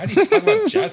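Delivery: high, loud, laughing disbelief.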